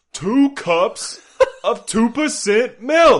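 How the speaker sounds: very high, very loud, slow drawn-out screaming. Attempting an audiobook impression, screaming: screaming Samuel L. Jackson impression. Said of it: "I was just screaming".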